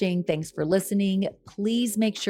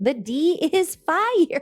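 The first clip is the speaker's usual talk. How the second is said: high-pitched, very drawn-out, slow voice; 9 semitones higher, 3 dB louder than usual. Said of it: "she's got that high-pitched voice".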